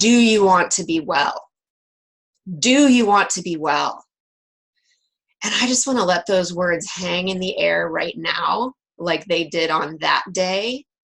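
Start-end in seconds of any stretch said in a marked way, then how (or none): 0.0-4.0 big, booming, resounding voice. Retelling words that rang out twice during a prayer, in a booming voice. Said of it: "in this booming voice".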